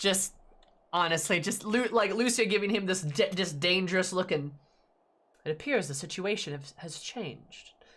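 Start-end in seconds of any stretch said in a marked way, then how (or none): 5.4-7.7 put-on deadpan voice, quieter. Reacting to a scene, the speaker acts out Lucia's line, mock-deadpan. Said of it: "Just deadpan serious".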